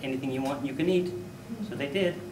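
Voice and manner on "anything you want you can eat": plain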